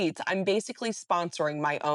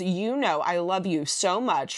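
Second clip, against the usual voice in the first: ordinary delivery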